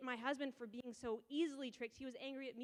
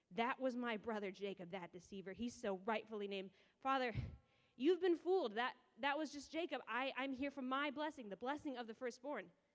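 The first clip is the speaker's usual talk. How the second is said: ordinary delivery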